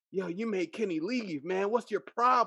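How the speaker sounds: sharp angry snapping. Retelling a friend scolding someone for making him leave: imitating someone snapping angrily. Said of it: "just snapping".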